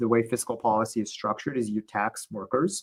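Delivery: normal talking voice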